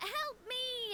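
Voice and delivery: high-pitched, mild, mock yell.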